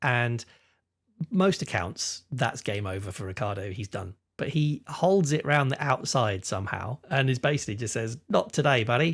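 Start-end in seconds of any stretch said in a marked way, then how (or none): 8.3-9.1 best attempt at a put-on Australian accent. Narrating a race, voicing Ricciardo holding it round the outside: Australian accent as Ricciardo. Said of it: "That's my best Australia accent".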